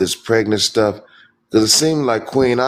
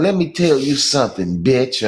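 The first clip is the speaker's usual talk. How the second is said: put-on crude cursing voice, higher; 3 semitones higher than usual. Retelling a video where she was cursing: imitating Queen Op talking ratchet. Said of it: "she was talking real ratchet".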